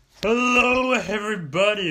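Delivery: very loud, throaty, rough-sounding, croaky voice. Opening an episode, then calling the greeting horrible: throaty, horrible-sounding greeting. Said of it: "that sounded horrible. I had some more throat".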